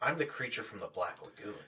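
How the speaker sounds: mock-angry voice. Speaker retells what the actor who played the monster said; mock-angry actor. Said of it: "so mad".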